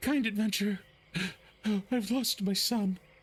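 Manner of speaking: anguished, distraught, high-pitched pleading. Voicing a woman who grabs an adventurer's arm: distraught woman who lost her son. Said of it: "she looks up at you and she says".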